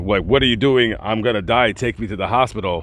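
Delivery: ordinary talk, nothing marked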